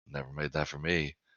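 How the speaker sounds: very quiet mutter under the breath. Retelling how their mother reacts whenever food is mentioned: muttering under her breath. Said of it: "she just mutters under her breath".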